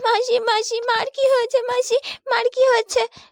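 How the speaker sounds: tearful. Asking an aunt what happened to mother: crying. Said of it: "কাঁদিস না মা".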